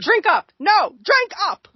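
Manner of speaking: mock, bossy, slow, high, scornful, disdainful tone. Retelling a scene, imitating Cersei pushing a drink. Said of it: "And then she's like".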